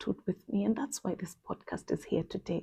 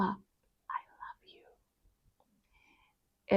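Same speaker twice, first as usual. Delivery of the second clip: just a quiet, soft whisper; 4 dB quieter than usual. Retelling what a friend at church would whisper to her. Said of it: "she would look at me and just whisper".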